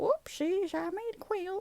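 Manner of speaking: very high put-on little-old-granny voice. Narrating a funny picture and voicing the grandma in it, grandma voice. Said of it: "that's my grandma voice".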